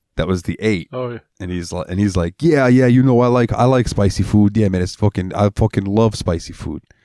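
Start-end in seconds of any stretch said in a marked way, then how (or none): 2.4-6.8 put-on heavy New York accent, laid on thick. Speaker retells what Leo from Yonkers said about spicy food: Leo's thick New York accent. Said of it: "he's got a real thick fucking New York accent".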